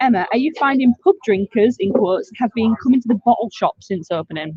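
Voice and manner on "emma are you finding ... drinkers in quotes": plain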